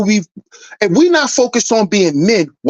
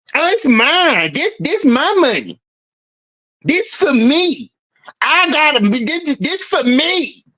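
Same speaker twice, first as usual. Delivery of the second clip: mocking, full-on diva voice; 5 semitones higher than usual. Mocking men who act like mothers with their money: mocking diva voice. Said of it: "where's all this diva energy coming from".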